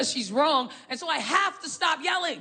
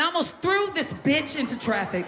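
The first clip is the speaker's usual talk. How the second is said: ordinary talk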